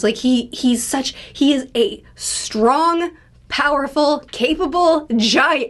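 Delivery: slow, cracking, breaking voice. Describing how a man acts on panels, voice cracking. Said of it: "Excuse me, sorry, my voice".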